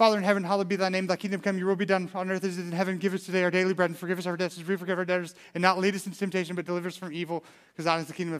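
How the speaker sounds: very fast, rapid-fire rattling delivery. Showing how the group could say the prayer in ten seconds, very fast. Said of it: "we could say it in like 10 seconds flat".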